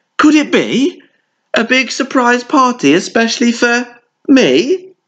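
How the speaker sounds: very high, exclaimed cry. Bear, woken by the popped balloon, answers the little bunny, exclaiming with a grin. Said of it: "Cried Bear with a grin".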